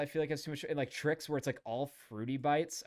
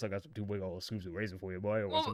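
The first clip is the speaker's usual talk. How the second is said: put-on deep voice; 7 semitones lower than usual. Imitating how the son might talk, in a put-on deep voice. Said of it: "He had a really deep voice. I feel like the son kind of talks like this".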